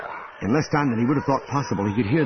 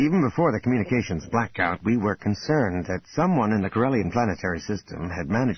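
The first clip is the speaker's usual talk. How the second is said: ordinary delivery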